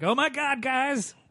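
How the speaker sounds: put-on excited voice. Imitating an excited text from a friend: reading a text excitedly. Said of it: "I read it like".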